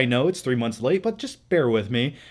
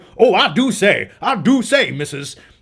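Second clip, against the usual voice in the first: slow, loud, exaggerated, thick Southern drawl; 5 semitones higher, 5 dB louder than usual. Reviewing a movie, imitating an actor: Daniel Craig bizarre Southern accent. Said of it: "the most bizarre Southern Kentucky Fried Chicken accent I've ever heard".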